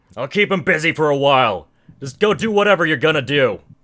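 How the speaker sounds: very loud, high-pitched orc warrior holler. Voicing an orc who draws his saber: orc shouting. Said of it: "he basically shouts".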